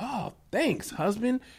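high, mock grateful, gushing voice.

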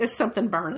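ordinary talk, nothing marked

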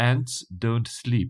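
put-on, imitation French accent. Showing a co-speaker a weird thing with one phrase, in a french accent. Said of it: "in a French accent".

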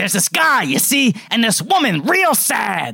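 movie-trailer narration, like a pitchman. Retelling a movie trailer where DeVito calls Ira: Danny DeVito impression.

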